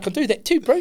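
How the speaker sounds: put-on New Zealand accent. An australian talking about accents offers to talk like a kiwi, put-on kiwi accent. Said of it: "don't like it. Don't ever do it again".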